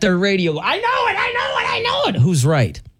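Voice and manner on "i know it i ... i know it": very high-pitched mock scream. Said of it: "who is screaming at their radio".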